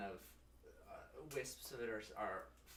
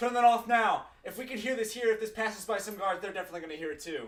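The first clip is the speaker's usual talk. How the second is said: very high, very loud shout; 11 semitones higher, 11 dB louder than usual. Voicing a character warning others about guards: Nona Mix yelling upwards. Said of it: "Nona Mix starts yelling upwards".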